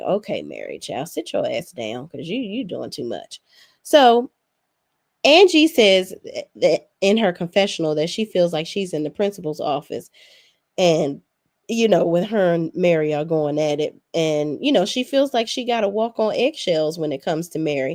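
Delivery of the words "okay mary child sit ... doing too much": low, soft, quiet, dismissive tone. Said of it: "I'm like".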